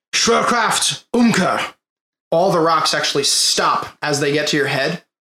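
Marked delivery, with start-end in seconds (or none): 0.1-1.7 yelled at high pitch. Narrating a scene where Aegisar stops falling rocks, yelling a spell. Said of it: "and he yells".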